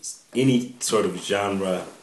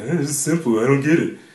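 offhand everyday-listener voice, high and raised; 7 semitones higher, 6 dB louder than usual. Acting out how a non-artist reacts to simple art: imitating a non-artist listener. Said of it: "That was my voice I was doing".

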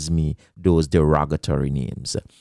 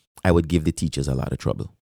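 plain

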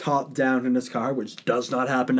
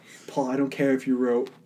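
normal talking voice

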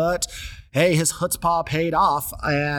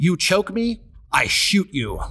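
light, mild, toned-down shout, kept small; 4 semitones higher than usual. Telling a story, the speaker acts out a man yelling while pointing at another man. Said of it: "Pointed at Lewis and yelled".

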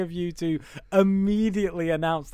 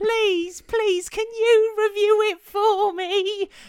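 mock, pleading Victorian boy voice, higher. Retelling a message from a co-host as a victorian boy, imitating a victorian boy pleading. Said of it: "a little Victorian Al message me".

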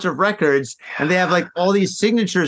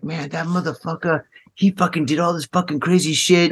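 harsh character voice. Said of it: "Is that your best [name] voice?".

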